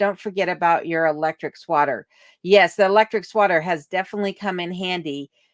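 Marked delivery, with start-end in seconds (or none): none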